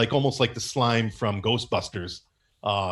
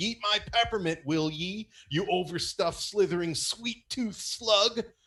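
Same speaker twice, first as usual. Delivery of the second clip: loud hollered yell, pitched up, like a battle cry; 9 semitones higher, 4 dB quieter than usual. The narrator describes Yukon fighting a giant worm and voices him, yelling. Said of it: "he's yelling".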